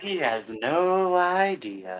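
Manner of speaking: drawn-out, very slow half-whisper. Half-whispering an aside to another character during the scene: half-whispering. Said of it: "I whisper to Mono".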